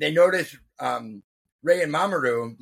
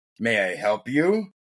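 mock grave, low, serious, very slow and deliberate; 4 semitones lower than usual. Recapping a scene where Mamoru looks over his shoulder, in a mock-serious voice. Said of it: "with a serious voice".

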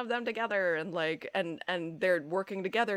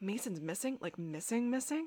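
soft, sarcastic, falsely earnest, fake-sincere shocked tone; 3 semitones higher, 6 dB quieter than usual. Speaker imitates a character reacting to Mason missing; Damon's mock-sincere voice. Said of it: "He's so fake sincere".

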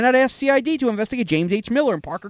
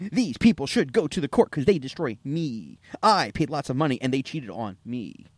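very low-pitched, grand delivery; 9 semitones lower, 6 dB quieter than usual. Performing a complaint for Joe and the others, in a Captain Kirk voice. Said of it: "When did she turn into Captain Kirk?".

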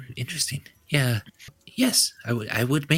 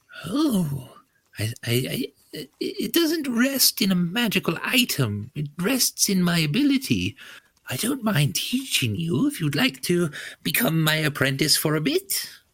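put-on old gnome woman voice, much higher; 4 semitones higher than usual. A game character answering a player who asks to learn her skill, in an old gnomish woman voice. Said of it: "I don't mind Viscera as much as the next old gnomish woman".

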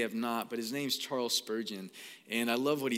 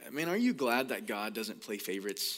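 usual speaking voice

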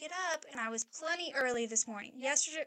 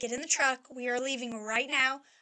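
ordinary talk

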